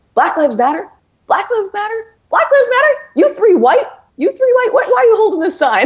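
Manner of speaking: very high, shrill, swooping, confrontational yelling. Retelling how three guys confronted people holding a sign, retelling a yell. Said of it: "they're just like yelling at them".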